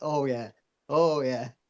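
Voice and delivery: very slow talk through helpless laughter. Retelling a cameraman's answer to the director: imitating someone laughing while talking. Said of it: "he's just in stitches".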